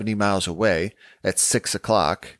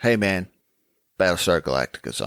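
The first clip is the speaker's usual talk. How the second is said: usual speaking voice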